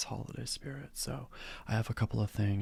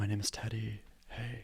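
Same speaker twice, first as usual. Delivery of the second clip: soft, close, gentle ASMR voice. Opening a video and greeting viewers in a soft ASMR-style voice. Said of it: "I'm talking in a sort of A S M R style".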